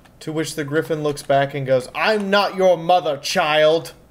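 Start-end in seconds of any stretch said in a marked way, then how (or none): 1.9-3.9 slow, regal, every-inch-royal voice. Retelling a scene, the narrator voices Saxa answering a confused child in royal Canterlot voice. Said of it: "Saxa is talking in royal Canterlot voice at a child".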